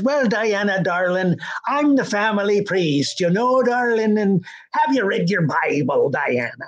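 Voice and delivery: put-on old priest's Irish brogue. Retelling a priest's lines in a movie: imitating an irish accent. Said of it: "hired an old Irish actor who talked like that".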